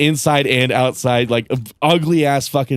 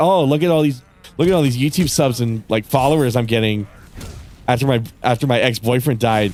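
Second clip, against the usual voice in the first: ordinary talk, nothing marked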